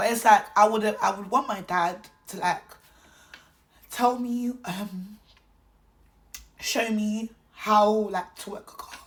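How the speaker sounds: voice strained from holding back tears. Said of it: "I don't wanna cry".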